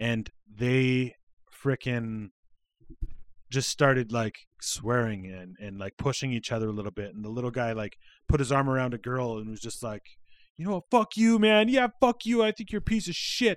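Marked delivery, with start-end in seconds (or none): 10.9-13.6 put-on very high, shrill, top-of-the-lungs kid yell. Retelling a fight between kids seen from a kitchen window: imitating a kid yelling. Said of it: "yelling at the top of their lungs".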